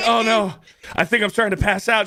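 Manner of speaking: very high, put-on swooning, fainting panic. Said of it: "she's like".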